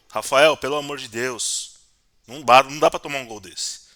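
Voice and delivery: loud, exasperated pleading voice.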